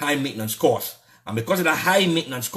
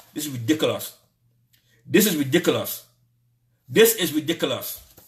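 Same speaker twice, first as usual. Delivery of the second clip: mad, really angry, repeated outburst. Speaking out against the government, getting angry. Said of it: "I'm mad".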